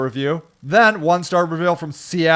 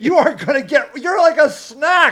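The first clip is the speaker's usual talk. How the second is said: put-on aggressive little dog voice, higher; 9 semitones higher than usual. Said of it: "this little dog, like this, just goes at this dog".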